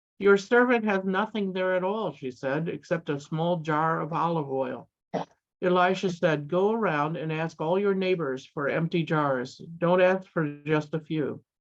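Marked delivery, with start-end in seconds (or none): none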